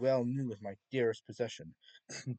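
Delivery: plain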